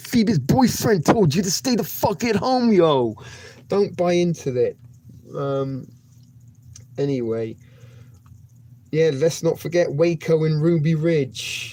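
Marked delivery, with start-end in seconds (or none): 0.0-3.1 high-pitched, put-on New York accent. Repeating the message to stay home again, this time in a New York accent. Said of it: "again in a New York accent".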